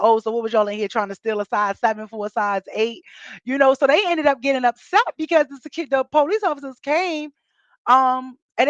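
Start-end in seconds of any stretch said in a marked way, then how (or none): none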